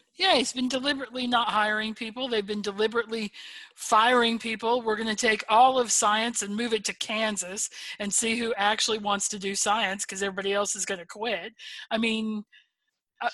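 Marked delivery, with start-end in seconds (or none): none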